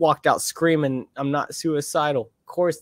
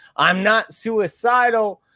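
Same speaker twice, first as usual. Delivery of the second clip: mock yelling at the top of the lungs; 7 semitones higher, 4 dB louder than usual. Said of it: "go out of the courtroom screaming".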